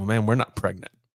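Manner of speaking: ordinary delivery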